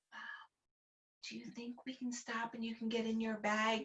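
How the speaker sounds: barely audible, hushed, very quiet whisper. Retelling what a son whispered during a car trip: imitating son whispering. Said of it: "whispering to me".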